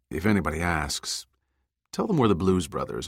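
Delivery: plain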